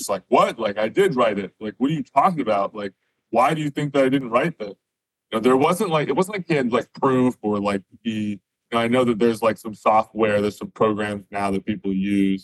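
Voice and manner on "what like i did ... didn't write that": mock baffled, incredulous, disbelieving tone. Retelling own reply to an accusation of not writing a paper: imitating own incredulous reply. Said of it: "I was pretty incredulous".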